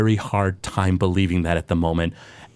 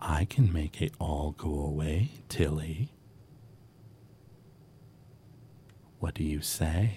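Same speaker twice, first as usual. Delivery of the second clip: faint, very quiet, hushed whisper; 5 semitones lower, 12 dB quieter than usual. The narrator voices a whisper that Tilly hears, whispering. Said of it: "you hear a whisper".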